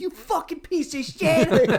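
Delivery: mock very high, shrill, enraged, drawn-out furious outburst. Retelling a movie scene where the driver is pissed: imitating an angry driver. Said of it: "the driver's, like, all pissed".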